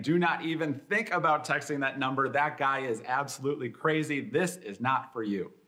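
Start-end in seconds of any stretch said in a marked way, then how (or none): none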